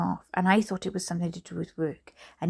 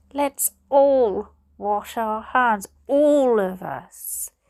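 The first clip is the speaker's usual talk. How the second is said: loud, forced out between clenched teeth; 3 semitones higher, 6 dB louder than usual. A narrator reads the father gesturing urgently up the stairs, through gritted teeth. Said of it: "he said through gritted teeth".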